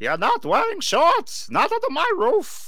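put-on very high, swooping grandma voice. Imitating a mom laying down her house rule, older woman voice. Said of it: "your universal mom impression ... an older woman ... that's her voice".

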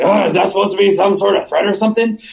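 terrible, wrecked, used-up voice. Retelling what a man at council meetings said, imitating a terrible ruined voice. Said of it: "he has this terrible, "I've ruined my voice," voice".

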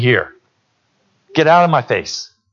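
play-acted tired dad voice, low, fed up, dismissive. Retelling a father who finally got tired of the begging: imitating a fed-up tired father. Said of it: "Daddy'd finally get tired and say".

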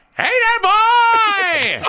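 put-on high, loud call with "boy" drawn out. Jumping in after someone asks for an impression, Sergeant Fury impression. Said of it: "that's Sergeant Fury".

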